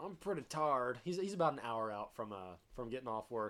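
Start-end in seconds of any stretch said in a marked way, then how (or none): 0.0-1.0 put-on old man accent. Quoting an old coworker from southern Indiana: imitating Larry's southern Indiana accent. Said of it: "he kinda has an accent to him".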